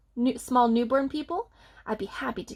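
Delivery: ordinary delivery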